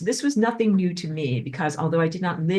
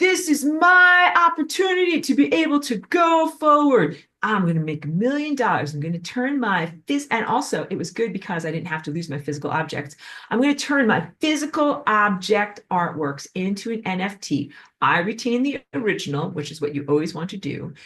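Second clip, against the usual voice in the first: put-on excitement with swooping, dripping sarcasm; 3 semitones higher than usual. Retelling what many people thought about NFTs, mocking with dripping sarcasm. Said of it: "the dripping sarcasm in my voice".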